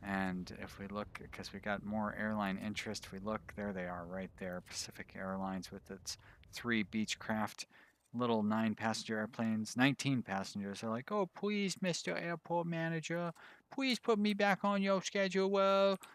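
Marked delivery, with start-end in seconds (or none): 11.1-16.0 very high-pitched, mocking, put-on baby talk. Mimicking a small airline pleading with the airport manager, in a mocking baby voice. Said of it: "don't try talking to me in that baby voice".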